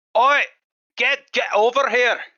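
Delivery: very high, very loud, drawn-out put-on Scottish accent. Trying out an accent for a character after being asked: scottish accent.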